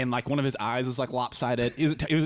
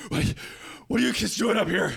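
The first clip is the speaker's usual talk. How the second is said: mock huffing and puffing, winded, high and rough; 7 semitones higher than usual. Retelling a cop arriving after running upstairs, imitating a cop out of breath. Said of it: "huffing and puffing".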